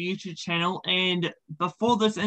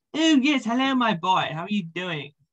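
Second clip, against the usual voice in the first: imitated British accent; 3 semitones higher than usual. Voicing the character Doctor Cromwell, in a Doctor Cromwell British accent. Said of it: "a character who I do a British accent for".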